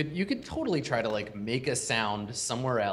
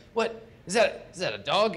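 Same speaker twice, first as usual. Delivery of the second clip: slow, pitched-up, startled, surprised tone; 8 semitones higher, 4 dB louder than usual. Voicing a skeleton guard who hears barking down the hallway: guard skeleton voicing surprise. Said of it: "he's like".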